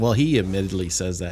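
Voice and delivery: ordinary talk, nothing marked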